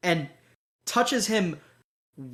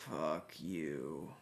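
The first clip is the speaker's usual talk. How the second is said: very quiet croaking voice, barely audible; 13 semitones lower, 16 dB quieter than usual. Retelling a scene where a malformed person answers: croaking voice. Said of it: "you just hear this croaking".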